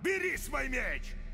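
high, loud, furious shout.

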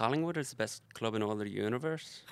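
attempted Irish accent with a lilt. Answering a request to try an Irish accent, reading the given sentence: attempted Irish accent. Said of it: "Give me a sentence to say and I'll give it a crack".

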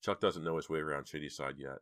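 plain reading voice

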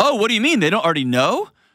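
very high, quick, put-on smart-aleck delivery. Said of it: "she said it so smart aleck".

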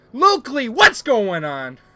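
loud, hyped-up hype-man shout. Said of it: "Why am I yelling?".

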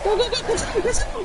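high panicked shouting, rattled off fast.

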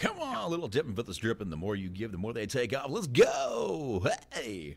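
loud, swooping, hyped-up strip club announcer voice. After a friend brings up the voice, launching into the bit as a stripper announcer. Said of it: "Stripper announcer".

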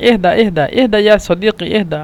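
ordinary delivery

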